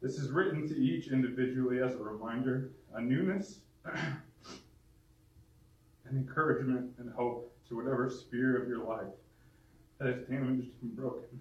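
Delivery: quivering, trembling, unsteady, wavering voice. Reading a written message of encouragement to listeners, the speaker's voice trembles. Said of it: "I just kind of tremble".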